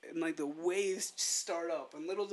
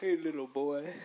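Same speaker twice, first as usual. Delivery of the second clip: put-on deep big-man voice; 2 semitones lower, 3 dB louder than usual. Retelling meeting Shaq when he shook hands: imitating Shaq. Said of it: "He was like".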